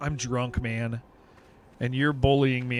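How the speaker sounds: put-on sad voice. Retelling what a drunk forty-one-year-old player said: imitating someone sad. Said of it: "he got really sad 'cause he was like".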